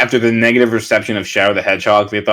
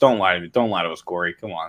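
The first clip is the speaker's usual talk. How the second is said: normal talking voice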